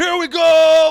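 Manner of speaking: very loud, very high hype yell, go stretched. Answering a viewer's compliment with a loud Dak Prescott voice. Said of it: "I just did it terribly right there because you said I had a great Dak Prescott voice".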